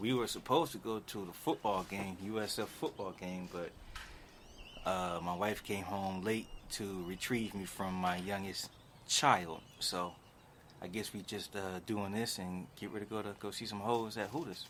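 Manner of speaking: low, hushed whisper all the way through. Answering the other speaker's question about what's new, whispering. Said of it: "Why do you seem like you're whispering".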